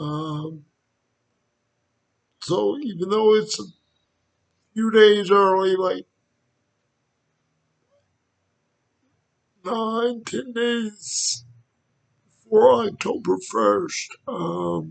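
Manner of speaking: breaking, cracking voice. Opening the first Halloween video of the season: voice cracking. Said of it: "sorry, my voice is cracking".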